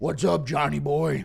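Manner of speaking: rough, creaky, growling devil-like voice. Impression of Satan greeting John Jones in hell, Satan voice. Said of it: "Impression of Satan greeting John Jones in hell".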